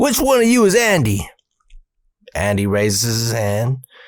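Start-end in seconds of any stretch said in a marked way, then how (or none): 0.0-1.3 mock angry, high, furious demanding tone. Retelling how a mayor confronted the group, imitating an angry mayor. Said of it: "He's just fucking mad as a motherfucker".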